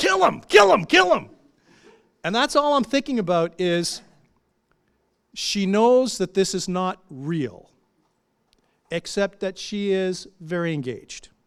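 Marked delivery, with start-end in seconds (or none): 0.0-1.3 very high, shrill, raw, rough frenzied yelling. Retelling a bank manager at a wrestling match: imitating someone yelling. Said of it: "is yelling".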